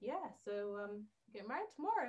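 mock, completely unruffled, casual and even tone. Retelling what he said when he called: imitating someone's ever so calm voice. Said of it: "In his ever so calm voice".

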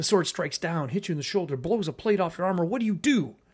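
lively, driving, fast and energetic storyteller delivery. Explaining pacing in storytelling, the speaker demonstrates talking energetically. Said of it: "If I start talking like this and I'm energetic".

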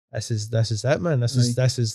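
usual speaking voice

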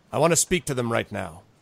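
normal talking voice

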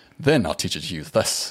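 bad, terrible put-on Scottish accent. Quoting a man talking to a kid who just lost his family, in a terrible scottish accent. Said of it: "I'm going to do my terrible Scottish accent".

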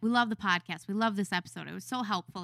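ordinary delivery

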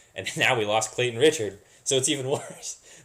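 laughing while speaking. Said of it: "I can't say that with a straight face".

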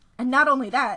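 ordinary delivery

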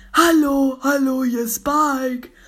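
shrill cartoon voice, belted out high and loud. Reacting to the German version, the speaker tries copying Spike's voice. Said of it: "ich kann die Stimme auch mit nachmachen".

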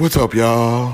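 imitated 1970s radio DJ, put-on retro host voice. Teasing a co-host who sounds like a radio host, imitating a 70s radio host. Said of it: "turned into like a radio host from like the 70s".

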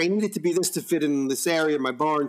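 usual speaking voice

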